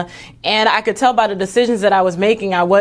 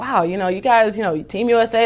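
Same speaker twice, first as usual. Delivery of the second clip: ordinary delivery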